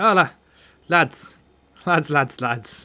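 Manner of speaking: put-on accent wandering between Welsh and Irish. Voicing a character who calls out to the lads, bit welsh or irish accent. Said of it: "I'm a bit of a bit Welsh now, but or Irish apparently".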